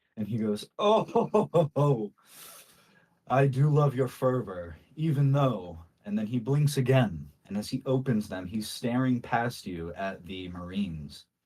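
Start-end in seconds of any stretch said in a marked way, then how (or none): 0.8-2.2 high, drawn-out burst of laughter. Voicing a character whose glare breaks, bursting into laughter. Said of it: "he just explodes into a go-".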